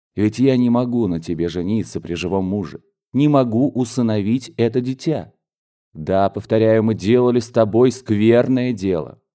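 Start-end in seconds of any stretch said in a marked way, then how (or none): none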